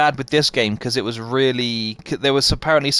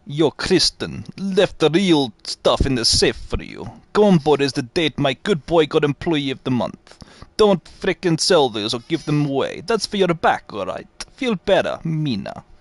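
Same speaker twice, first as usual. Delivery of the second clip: clumsy, bad put-on Russian accent; 2 semitones higher than usual. Attempting an accent he says he is terrible at, the speaker does a bad Russian accent. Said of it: "the mindset of a Russian".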